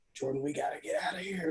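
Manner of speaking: hushed whisper. Retelling walking in to collect a huge check: imitating his own whisper. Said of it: "I was whispering".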